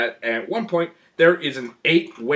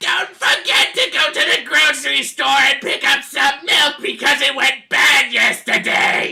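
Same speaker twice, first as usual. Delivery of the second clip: put-on very high, shrill, screeching old lady voice; 6 dB louder than usual. Mocking a character who shrieks everything, saying an ordinary sentence in a shriek. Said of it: "she just shrieks everything she says".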